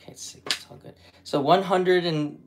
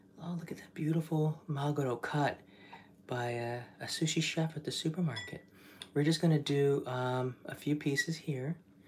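hushed, peaceful, calm, soft voice; 11 dB quieter than usual. Preparing sushi while narrating the steps, calm, peaceful cooking voice. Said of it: "This is my cooking voice".

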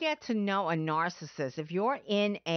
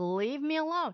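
fed-up, high-pitched, angry shriek; 7 semitones higher than usual. Retelling how a client screamed at her partner: imitating someone screaming. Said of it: "She'd be screaming at him".

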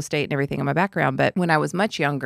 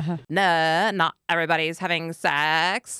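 put-on California Valley girl accent. Retelling being interviewed on camera as a teenager: valley girl accent. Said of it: "in my fresh Valley girl accent".

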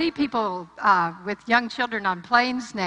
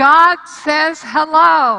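very loud, high-pitched proclaiming, hello stretched out; 7 semitones higher, 11 dB louder than usual. Retelling what she said from the altar: retelling a very loud voice. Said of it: "she said in the loudest voice I had heard".

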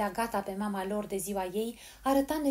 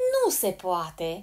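merry, glad-sounding, cheerful voice; 2 semitones lower, 4 dB louder than usual. A voice interrupts a child sobbing on the kitchen floor, cheerful voice. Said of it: "spuse atunci o voce veselă".

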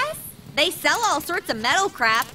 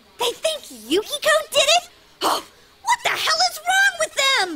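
sudden, pitched-up angry snapped outburst; 11 semitones higher than usual. Hearing that the police suspect a friend: snapping angrily. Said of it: "don't snap at me".

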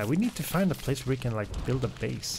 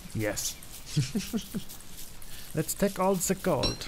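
bad fake German accent, pitched up; 6 semitones higher than usual. Playing the Axis forces in a game, answering a question, bad German accent. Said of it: "That was the worst German accent I've ever made".

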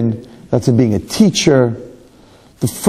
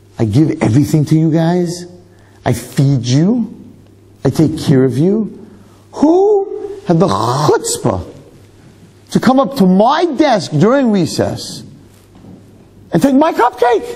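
high, swooping, mock outraged rant, building up; 6 semitones higher than usual. Retelling the speaker's own outburst after a cupcake was taken from the desk: retelling own furious outburst. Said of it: "So I went crazy".

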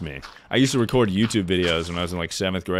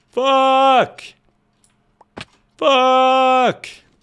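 very high, full-volume, stretched-out yell; 7 dB louder than usual. Showing you can swear as loud as you want: yelling fuck. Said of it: "I can yell "fuck" as loud as I want".

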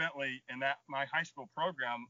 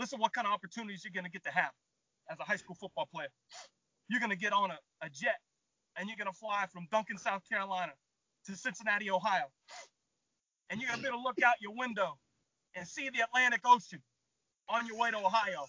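tearful, choked-up, heartfelt, higher pitch; 7 semitones higher than usual. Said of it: "tearing up".

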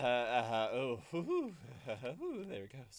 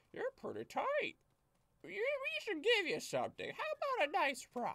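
put-on birdlike voice, very high and swooping. Retelling what a guy said when given the banners, giving him a bird voice. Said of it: "I don't know why I gave him a bird voice".

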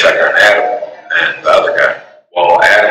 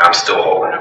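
usual speaking voice

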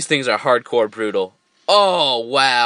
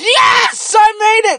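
very high, loud, shrieking, all-out scream; 6 dB louder than usual. Streamer reacts during a game round, screaming. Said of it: "sorry for screaming".

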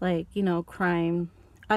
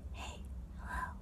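very light, soft, barely audible whisper. Showing what asmr sounds like: really light whispering. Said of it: "really light whispering, like".

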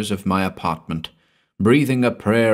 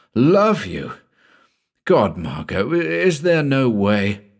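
slow, rasping, hoarse voice; 3 semitones higher than usual. Narrator voicing Paul replying to Margot, hoarse. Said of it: "I said hoarsely".

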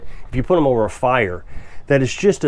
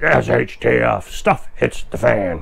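gruff, growly, rough put-on voice. Imitating how preppers say it, in a growly voice. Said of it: "I always have to use a growly voice".

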